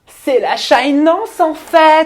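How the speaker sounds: very high, very loud, slow, shrill drawl. Playing a guessing game, doing an imitation for the others: imitating Mélanie. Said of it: "pourquoi je vous fais une imitation de Mélanie".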